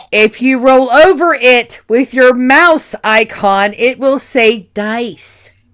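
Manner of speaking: forceful, very loud, aggressive, high-pitched insistent voice. Explaining to another player where to click on screen: aggressive. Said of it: "Why are you being so aggressive?".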